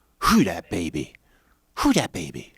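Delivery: deep, swooping called-out phrase. Redoing a game's title the way Roy says it on the show: imitating how Roy says it. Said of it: "I didn't say that as well as Roy says it".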